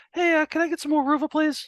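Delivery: high-pitched squeaky cat voice. Showing the voice done for a pet cat: high-pitched cat voice. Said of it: "it's always high pitched".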